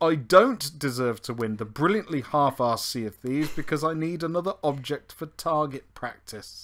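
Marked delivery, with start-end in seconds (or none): none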